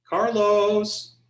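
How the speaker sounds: put-on sugary high call. Mom calling your name when she wants something, mock-sweet calling of Carlos. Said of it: "she's being really sweet".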